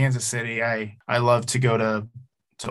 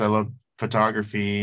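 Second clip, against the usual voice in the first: ordinary talk, nothing marked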